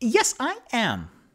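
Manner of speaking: very high voice, every sound clearly enunciated. Speaker retells a scene's dialogue, giving the reply in a very enunciated Paige voice. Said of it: "Very enunciated and female".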